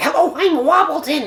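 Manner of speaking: very high, goofy, silly put-on voice. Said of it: "we have a very silly".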